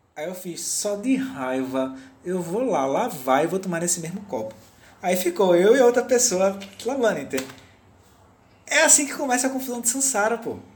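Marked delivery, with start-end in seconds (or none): none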